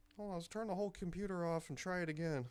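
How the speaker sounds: high, bewildered, lost-sounding parent voice. Acting out parents using Skype for the first time: imitating parents on Skype. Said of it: "Like your parents when they first use Skype".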